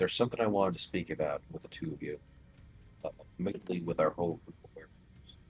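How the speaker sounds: speaking in a hush. A player, in character, raises something about their werewolf group with the other two, in a hushed tone. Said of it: "Barney's speaking in sort of a hushed tone".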